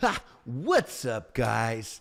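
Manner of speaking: put-on child voice. Imitating how an AI assistant talked: a kid's first YouTube video. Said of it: "if a kid wanted to film their, their first, like, YouTube video".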